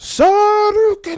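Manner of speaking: acted video game battle shout. Doing a Street Fighter voice after a review is announced: Street Fighter Ryu voice. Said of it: "my, uh, Street Fighter Ryu voice".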